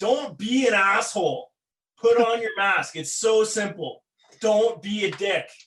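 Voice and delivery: mock heated, angry yelling, put-on. Retelling security yelling at a man about his mask: retelling a security guard yelling. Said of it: "start yelling at this guy like".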